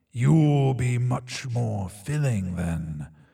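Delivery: deep, gravelly, rough drawling voice. Reading a story where a talking asphalt mouth speaks, deep gravelly drawl. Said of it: "A voice, deep and gravelly, drawls".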